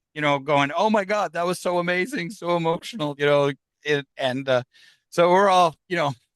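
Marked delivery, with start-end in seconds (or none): 0.7-3.1 mock tearful, overwhelmed crying and sobbing voice. Retelling what a crying client said after the session: imitating someone crying. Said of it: "This guy's crying".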